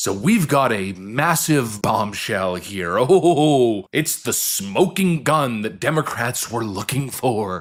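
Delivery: put-on thrilled sarcasm with a drawn-out "oh". Host introduces the next accusation to viewers: sarcastic mock excitement. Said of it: "I'm sure you can sense the sarcasm in my voice".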